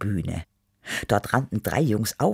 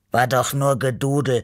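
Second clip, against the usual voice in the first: snorting, huffing; 5 dB louder than usual. A character replies to another's sigh about the music stopping, snorting. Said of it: "schnaubte Beppo".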